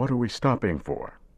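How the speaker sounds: drowsy, half-awake. Reading Tony in the back seat asking why the car stopped; sleepy voice. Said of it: "he asked in a sleepy voice".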